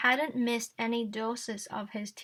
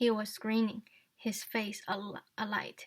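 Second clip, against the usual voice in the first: ordinary delivery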